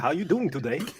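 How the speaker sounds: mocking mimicked speech. Retelling an awkward moment, mimicking someone's speech. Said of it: "I was like".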